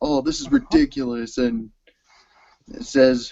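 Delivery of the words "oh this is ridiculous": mock whiny tone, pitched very high. Retelling a complaint from the show, imitating whining. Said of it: "he's all whining and saying".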